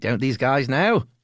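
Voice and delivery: put-on New Zealand accent. Imagining what australian listeners think of the two hosts: new zealand accent. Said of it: "you do the best New Zealand accent".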